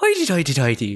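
put-on Irish accent. Explaining Scottish versus Irish accents to another speaker, Irish accent. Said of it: "The Irish accent is more like".

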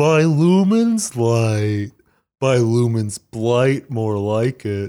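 slow, glum, dejected, bummed-out, drawn-out voice. Voicing a character after being told to make him bummed: bummed Roderick voice. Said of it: "it's gotta be a bummed Roderick".

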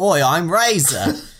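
put-on Australian accent. Retelling a disguised character's line in a put-on Australian accent. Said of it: "an Australian accent".

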